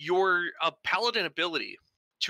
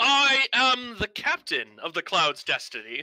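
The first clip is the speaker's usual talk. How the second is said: loud, firm, affirmative, grandiose proclamation; 4 semitones higher, 5 dB louder than usual. Voicing the ship's captain answering who leads: proclaiming affirmatively. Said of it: "proclaims very, uh, affirmatively".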